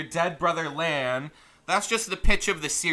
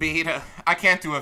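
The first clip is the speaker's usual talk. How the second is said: usual speaking voice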